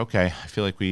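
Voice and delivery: ordinary talk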